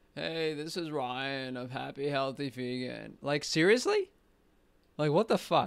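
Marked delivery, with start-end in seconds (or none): 0.2-3.2 put-on dying-sounding voice. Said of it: "The guy sounds like he's fucking dying".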